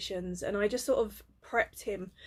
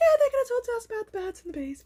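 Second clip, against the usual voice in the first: put-on very high-pitched small little boy voice; 6 dB louder than usual. A parent imitates how their son sounded when younger: little boy voice. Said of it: "It was his little voice".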